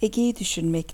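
ordinary delivery

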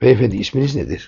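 ordinary delivery

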